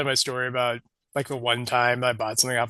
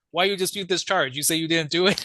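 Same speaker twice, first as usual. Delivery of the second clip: irate, angry, accusing tone, pitched up; 5 semitones higher than usual. Retelling a call from a customer service agent, as a mock-angry customer service caller. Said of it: "they're like pissed at me".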